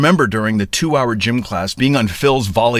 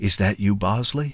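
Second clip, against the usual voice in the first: quiet, hushed, furtive tone; 5 dB quieter than usual. Answering the phone after glancing around for watching strangers, in a hushed tone. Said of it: "in a hushed tone I answer".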